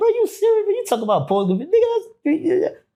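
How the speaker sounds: play-acted laughing, pitched very high. Retelling his own reply to people whose cases seemed simple: retelling own laughing reply. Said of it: "So I'm laughing like".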